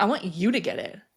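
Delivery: acted-out bossy, rude, demanding tone with attitude. Speaker retells what she said this morning, imitating her tone. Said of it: "she woke up this morning with a tone".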